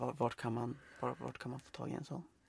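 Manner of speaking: near whisper. Speaker acts out asking at the checkout for a special magazine, quieter, almost whispering. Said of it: "börja prata lite tystare".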